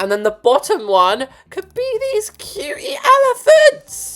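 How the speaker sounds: voice cracking with excitement. Describing wall trims picked for a nursery: voice cracking with excitement. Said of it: "my voice just cracked into glass".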